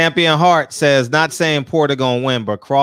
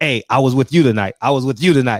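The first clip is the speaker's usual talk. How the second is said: normal talking voice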